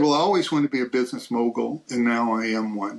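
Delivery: ordinary talk, nothing marked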